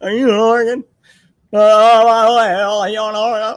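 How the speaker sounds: very loud, high, belted-out presidential voice. Asking a chat member where they live in Oregon: Joe Biden impression. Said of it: "That's my new Biden impression".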